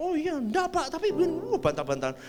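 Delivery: high-pitched, polite, dismissive brush-off tone.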